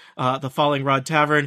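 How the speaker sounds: ordinary talk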